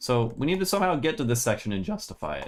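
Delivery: cracking voice. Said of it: "My voice is cracking like fucking crazy".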